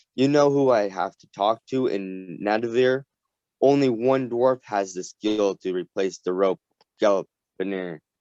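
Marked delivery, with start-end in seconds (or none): none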